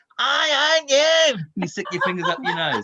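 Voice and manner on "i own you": brash, shrill, very high, loud, obnoxious taunting tone. Showing a group how to say the line to people: loud and obnoxious. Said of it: "you say it really obnoxiously".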